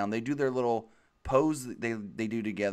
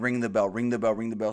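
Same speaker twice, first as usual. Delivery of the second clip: plain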